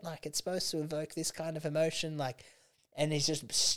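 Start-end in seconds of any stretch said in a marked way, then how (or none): 0.3-2.2 put-on angry yell, higher. Retelling a performer freaking out at the lighting guy: imitating a performer yelling. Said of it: "yelling at, like, the lighting guy".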